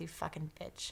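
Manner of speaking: mock muttering under breath. Retelling what a man muttered as she ran toward the house; imitating a muttered insult. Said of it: "I heard him mutter under his under his breath".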